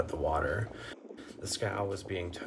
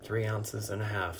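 ordinary delivery

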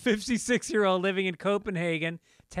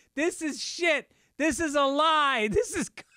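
high-pitched, heated screaming yell; 8 semitones higher than usual. Telling of a man walking on the art, retelling him screaming back at the guard. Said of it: "he was screaming back at them".

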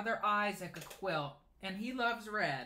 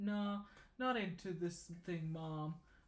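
put-on sulky teenage voice. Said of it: "classic teenage voice".

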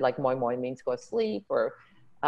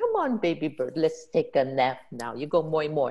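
put-on Hawaiian pidgin-accented speech; 2 semitones higher than usual. Recreating her Hawaiian auntie character coaxing a character to nap, Hawaiian pidgin accent. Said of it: "I just went in with a pidgin accent".

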